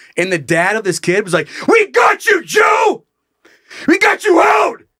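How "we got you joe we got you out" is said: very high, shrill, drawn-out screaming, acted out. Retelling how a player's dad screamed at him during a play: imitating a dad screaming. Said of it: "but he was screaming at me".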